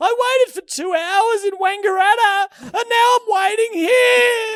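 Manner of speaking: put-on, shrill, very high, very loud, distraught outburst. Retelling an old lady on a delayed train, imitating her distraught. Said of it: "this lady was beside herself".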